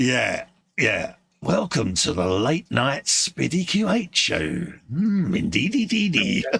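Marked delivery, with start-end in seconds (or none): 1.4-6.5 deliberately creepy put-on voice. Joking around with a co-host on the show, in a put-on creepy voice. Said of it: "That's a bit creepy, that".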